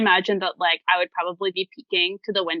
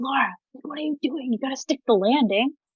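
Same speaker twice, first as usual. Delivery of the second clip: whispering, higher pitch; 6 semitones higher than usual. Character sees a companion faceplant and whispers to her. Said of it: "I like whisper".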